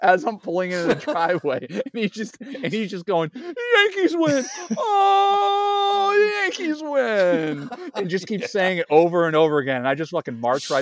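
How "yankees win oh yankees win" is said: very high, very slow gloating bellow, "oh" stretched. Retelling what a man on the porch kept saying as they pulled in, imitating his bellowing. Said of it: "this bellowing".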